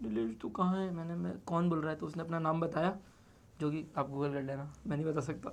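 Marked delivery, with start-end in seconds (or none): 0.0-0.9 mock, tearful crying voice, pitched higher. Retelling how a crying friend spoke to him, imitating a friend crying. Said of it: "ऐसे रोते रोते बोली कि".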